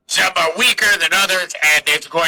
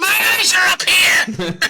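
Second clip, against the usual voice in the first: high-pitched put-on lady's voice; 13 semitones higher than usual. Voicing a character after a player's perception check, feminine voice. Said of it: "Feminine voice".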